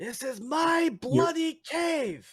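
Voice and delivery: put-on, very high, drawn-out yell. Answering a yelling figure in a cave: yelling back in character. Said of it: "I'll yell back".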